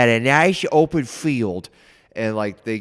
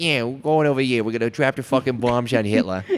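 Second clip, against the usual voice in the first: bad, cartoonish, old-fashioned New York accent. Mocking an actor's accent in a show, bad Barry Keoghan New York accent. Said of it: "how New Yorkers in that age talked".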